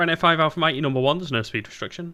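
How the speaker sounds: very fast, rushed, rattled-off delivery. Giving a radio instruction to Ryanair five Alpha Mike, speaking very quickly. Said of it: "Why am I speaking so quickly?".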